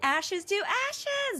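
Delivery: very high, gritty, projected cry. Defending fellow voice actors, showing why a line is hard: projecting in a high voice. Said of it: "projecting in a high voice".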